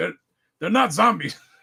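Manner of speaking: put-on heavy, laid-on Italian accent. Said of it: "with a heavy Italian accent".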